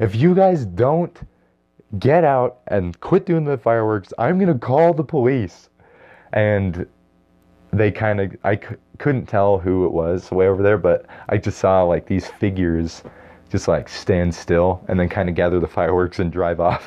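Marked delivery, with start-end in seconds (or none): 0.0-5.7 mock shouting, high, full-lungs yell. Recalling threatening people doing fireworks in a parking lot, retelling own yelling. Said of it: "I was yelling at the top of my lungs".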